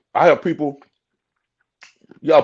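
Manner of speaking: speaking through a mouthful of ice. Speaker telling listeners about people they talk to, talking while chewing ice. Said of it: "pardon me, chewing this ice".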